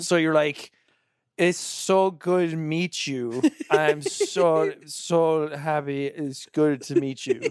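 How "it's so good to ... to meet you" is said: put-on slurring, much slower. Retelling meeting friends of friends while drunk; imitating drunken slurring. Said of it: "you know you're slurring your words".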